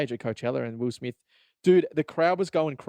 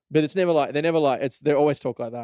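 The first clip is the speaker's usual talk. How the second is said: ordinary delivery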